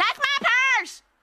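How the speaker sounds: shrill, very high, loud shouting outburst. Coaching a performer not to be afraid, the speaker demonstrates the line by shouting it. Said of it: "Don't be afraid to shout it".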